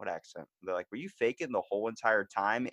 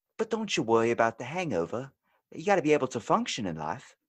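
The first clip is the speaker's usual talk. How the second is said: put-on British English accent; 3 semitones higher than usual. In a two-character accent skit, answering the beer drinker in a british uk accent. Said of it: "I will do my UK accent".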